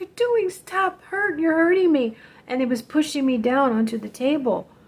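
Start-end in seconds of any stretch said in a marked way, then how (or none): 0.0-2.2 high, pleading, desperate yell. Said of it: "I'm just yelling".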